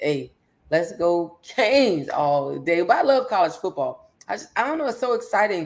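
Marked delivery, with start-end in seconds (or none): none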